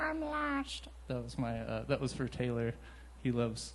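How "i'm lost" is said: put-on cartoon alien voice, higher and quieter. Doing a Stitch impression for a friend who loves Lilo and Stitch. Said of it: "Stitch impression from Lilo and Stitch".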